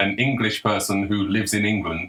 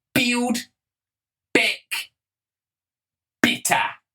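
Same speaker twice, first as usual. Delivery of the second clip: put-on New Zealand accent, very high-pitched. Imitating how she used to say a phrase, in a new zealand accent. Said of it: "the New Zealand accent ... she used to go".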